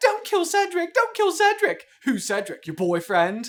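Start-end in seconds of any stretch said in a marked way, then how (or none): 0.0-1.8 shrill, high, loud whimper, pitched way up. Narrating Dudley mocking Harry, in a high-pitched whimpering voice. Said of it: "adopted a high-pitched, whimpering voice".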